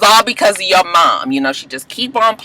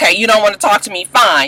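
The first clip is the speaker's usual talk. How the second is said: put-on frustrated speech. Retelling the groom's reply after being refused: imitating frustrated speech. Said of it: "he's just all frustrated".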